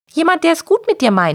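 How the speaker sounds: merry, good-natured, cheerful, bright high voice. Narrator reads the wizard answering the little cat, cheerful. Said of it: "antwortete der Zauberer vergnügt".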